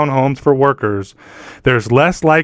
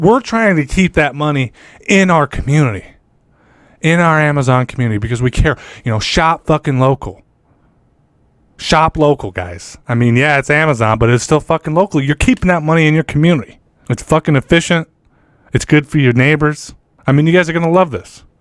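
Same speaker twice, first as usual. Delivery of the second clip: fake-sincere, sarcastic corporate sales-pitch voice. Mocking a corporation's pitch about shopping locally: mock sarcastic corporate sales pitch. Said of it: "sarcasm aside".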